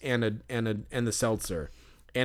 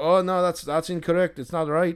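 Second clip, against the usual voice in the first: put-on Irish accent, laid on thick, pitched up; 5 semitones higher than usual. Retelling what the self-checkout monitor said: imitating a thick Irish accent. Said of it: "He's got this thick Irish accent".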